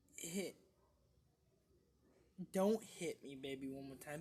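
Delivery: the word "don't" stressed, said loud. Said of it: "More like".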